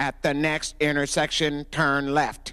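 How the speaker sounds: flat, synthetic, robotic machine voice. Imitating the car navigation system, robotic voice. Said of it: "this navigation system that we had sounded very robotic, like this".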